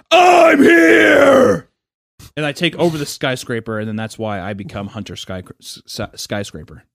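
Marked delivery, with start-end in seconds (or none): 0.1-1.7 mock yell, higher and louder. Telling a story about taking over a skyscraper, speaker retells his yell. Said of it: "I yell that in there".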